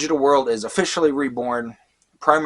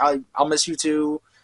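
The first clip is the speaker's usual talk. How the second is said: mock weepy, broken-up sobbing, stumbling tearful voice; 4 semitones higher than usual. Retelling a farewell scene where the character cries: imitating Mimi crying. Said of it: "and she's crying, like".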